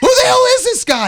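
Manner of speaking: shrill, high, loud, furious scream. Recounting Michael calling and cursing at him: retelling Michael's screaming. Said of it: "He's screaming and cursing at me".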